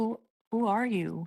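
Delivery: very soft, hushed, very quiet, high voice. Acting a woman who looks at him and asks, in a very quiet voice. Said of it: "look at him in a very quiet voice and be like".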